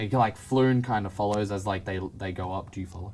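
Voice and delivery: ordinary delivery, nothing marked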